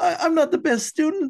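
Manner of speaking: very high-pitched, pushed-up cartoon teen voice. Retelling a student on stage looking at the camera crew, talking like Morty. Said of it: "I'm talking like Morty from Rick and Morty".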